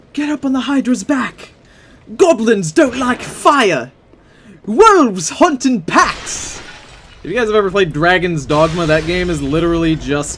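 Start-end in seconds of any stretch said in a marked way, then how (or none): 0.1-6.6 put-on high-pitched, slow, screamed shout in British accent. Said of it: "characters screaming that at you".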